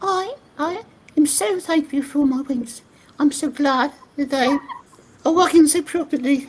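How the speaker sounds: put-on very high, tiny baby creature voice. Voicing a baby griffin after another speaker asks: little tiny griffin voice. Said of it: "how you would voice a little tiny griffin".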